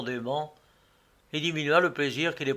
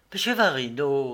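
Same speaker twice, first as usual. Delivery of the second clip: plain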